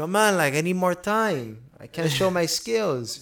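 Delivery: put-on Brazilian-accented speech. Retelling a fighter's awkward post-fight interview: imitating Johnny Walker's Brazilian accent. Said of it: "So he has his accent".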